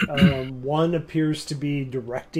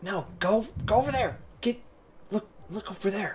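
soft voice, quieter and higher; 6 semitones higher, 3 dB quieter than usual. The narrator voices someone Victon overhears after getting out of bed: softer voice. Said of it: "you hear in a softer voice".

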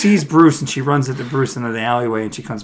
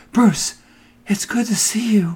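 put-on high, slow, childlike way of speaking; 9 semitones higher than usual. Retelling a movie scene, imitating an actress's childlike voice. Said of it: "that's just how she speaks".

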